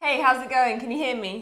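speaking loudly. Checking whether the other person can hear, talking loudly. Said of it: "I'm s-, talking loudly".

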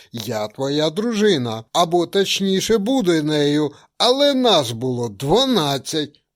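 loud, shouted crying out. Narrator reads a woman rising from bed to contradict the narrator, shouting. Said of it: "крикнула".

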